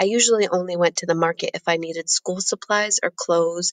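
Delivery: plain reading voice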